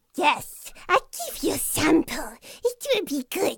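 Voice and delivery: really monstrous, loud, swooping creature voice. Asked for a sample of the voice they want to try, in a monstrous voice. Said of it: "a really monstrous kind of voice".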